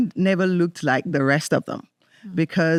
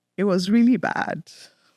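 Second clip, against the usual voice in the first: right on the edge of crying, holding back tears. Recalling being branded a thief, the speaker goes on: trying not to cry. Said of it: "I'm trying not to cry".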